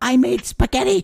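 put-on motherly voice, very loud, high-pitched yelling. Recalling moms heard behind kids in Xbox Live lobbies: impression of a mid-40s mom. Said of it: "That's my impression of every like mid-40s mom".

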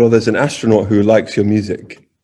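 ordinary talk

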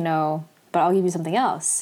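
normal talking voice

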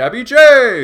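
booming, very loud, very high boxing-announcer bellow. Describing a video game's fighter intro, boxing announcer impression. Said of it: "it would be the announcer going".

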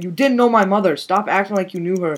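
play-acted, super angry, furious, boiling-over outburst. Retelling a scene where Lei snaps at Fang: imitating someone super angry. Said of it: "Lei just gets super angry and says".

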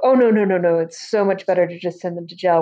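plain

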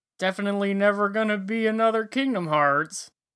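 thick sarcasm. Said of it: "Is that sarcasm?".

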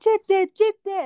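very high-pitched, very loud hollering. Retelling yelling from a balcony as a kid when the family's taxi arrived, retelling a yell. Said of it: "And I'm yelling this".

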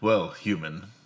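scornful, disdainful, condescending tone. Voicing a dwarf who addresses a human: disdainful. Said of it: "he says that with a bit of disdain".

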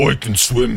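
blunt, brutish, oafish, thick-headed voice. Voicing a character bouncing up after diving into a river: brutish way of speaking. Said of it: "in the most brutish way says".

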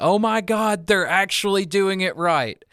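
mock gleeful, thrilled, high-pitched excited outcry. Recalling jumping out of their chair, the speaker is retelling own screaming. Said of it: "started screaming".

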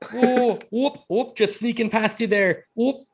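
put-on Minnesota accent. Joking about accents in a movie, riffing in a Minnesota voice: put-on Minnesota accent.

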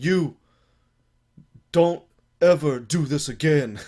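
put-on booming French accent with broken English. Retelling what a french man told him, in broken english with a french accent. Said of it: "tries to say it in like broken English".

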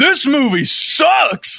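put-on, very high-pitched, loud heckling shout. Retelling what one guy in the theater said out loud: imitating a loud shout. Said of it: "as loud as he could".

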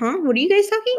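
very high put-on dog voice. Voicing the dog interrupting the talk: voicing the dog. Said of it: "the dog was like".

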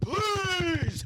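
shrill, very high-pitched shouting. Retelling begging the spotter at the gym: imitating own yell. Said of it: "This guy's yelling in the house".

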